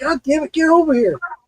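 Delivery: high, loud yelling shout. Retelling calling a dog away from the water: retelling own past yelling. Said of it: "I kept yelling".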